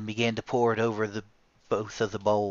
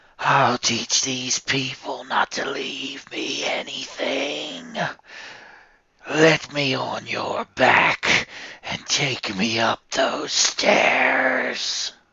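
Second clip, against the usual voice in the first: loud, furious, raging evil creature voice; 3 semitones higher, 5 dB louder than usual. A narrator voices a creature who has flown into a rage at Mary, in a rage. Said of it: "Mary knew this was an evil creature. / Mary knew this was an evil creature. She could tell by the clawed fingers hooked in her hair and its terrible breath on the back of her neck. / And again the dea".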